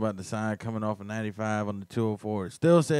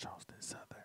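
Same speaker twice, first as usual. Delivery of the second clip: soft, breathy whisper off the mic. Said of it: "You gotta speak in the mic so Facebook can hear you".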